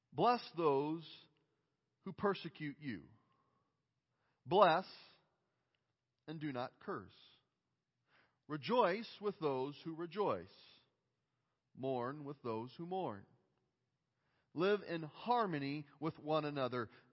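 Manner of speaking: deliberately very slow reading aloud. Reading a Scripture passage aloud while a group reads along: very slow reading. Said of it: "I'm going to read it as slow as I possibly can".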